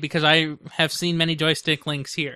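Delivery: plain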